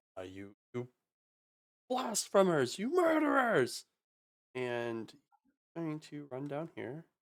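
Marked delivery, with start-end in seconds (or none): 0.2-3.9 furious scream, higher pitch. Voicing a scribe who runs at the party: screaming in rage.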